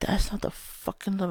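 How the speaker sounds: frustrated, fed-up scream, blurted out. Speaker retelling what she screams at him: retelling a scream at him. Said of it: "And I'll s- scream at him".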